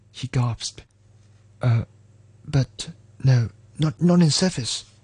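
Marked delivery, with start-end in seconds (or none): 1.6-4.8 stuttering, stammering. A driver refuses a stranded man's request for a ride, stuttering. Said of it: "Tommy stuttered".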